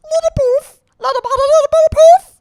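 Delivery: very loud, very high, shrill piping voice. Showing off impressions, doing a Bibble impression. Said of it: "I can also do Bibble".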